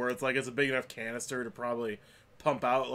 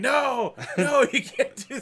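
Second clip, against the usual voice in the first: shrill, very high, drawn-out screaming; 13 semitones higher, 8 dB louder than usual. Retelling how a woman tackled by cops screamed: imitating a woman screaming. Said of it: "she's just screaming".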